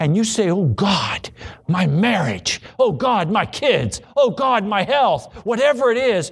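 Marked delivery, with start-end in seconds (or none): 0.5-5.3 desperate, pleading, crying-out voice. Acting out someone crying out to God: imitating crying out to God. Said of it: "when you begin to cry to Him".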